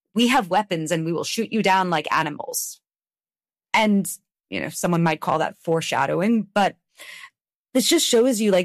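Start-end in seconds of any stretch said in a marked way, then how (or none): none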